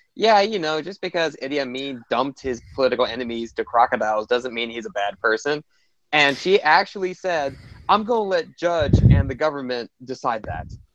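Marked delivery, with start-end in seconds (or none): none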